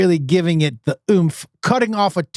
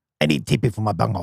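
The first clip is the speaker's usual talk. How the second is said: very low, quiet, hushed cartoon voice; 9 semitones lower, 5 dB quieter than usual. Asked to repeat the impersonation while the listener closes their eyes: Beavis impression. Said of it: "It's the same exact voice".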